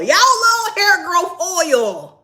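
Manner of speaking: slow, high, swooping yell with "oil" stretched long. Talking to the audience, yelling at them. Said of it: "I'm yelling at y'all".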